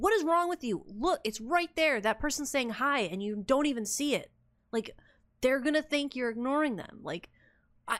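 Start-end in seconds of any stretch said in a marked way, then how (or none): 0.0-7.0 high-pitched scolding yell, ranting at full tilt. Retelling watching an old stream and missing chat: retelling yelling at herself. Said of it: "literally yelling at myself".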